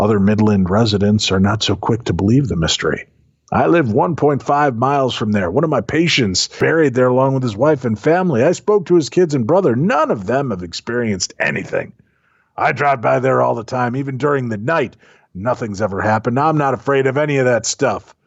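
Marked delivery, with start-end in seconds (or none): 3.5-18.0 put-on grumpy, cranky old-timer voice. Reading a local resident's quote aloud: crabby old man voice. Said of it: "doing that crabby old man voice for Nicole".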